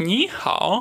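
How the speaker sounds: ni lifted into a rising second tone. Explaining tone change in ni hao, third tone turning second: rising tone on ni. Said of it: "третий тон в первом в «ни» становится вторым".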